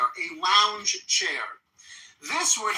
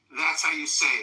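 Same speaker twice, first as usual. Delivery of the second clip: ordinary talk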